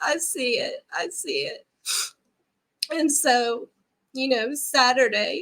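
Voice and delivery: weeping, tearful, crying while trying to talk. Sharing a personal story with a listener, crying while speaking. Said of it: "I'm sorry, I'm crying".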